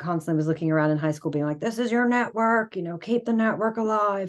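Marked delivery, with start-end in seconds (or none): 1.6-4.3 put-on, fatherly dad voice. Retelling what a father kept saying in high school: imitating dad's voice. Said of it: "that's my dad voice".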